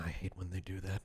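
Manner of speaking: muttered under breath. Voicing a character after someone vanishes, speaking under her breath. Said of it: "under her breath she goes".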